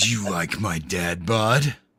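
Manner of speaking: put-on deep masculine voice. Discussing Nebula in the movie, voicing her in a deep manly voice. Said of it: "I'm talking to you in this deep, manly voice".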